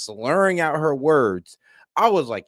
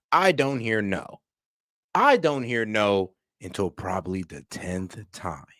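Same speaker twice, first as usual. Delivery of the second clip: playful mock-villainous menace; 4 semitones lower than usual. Speaker repeating a line to the viewers with mock-villainous delivery. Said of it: "a little bit of villain behind it".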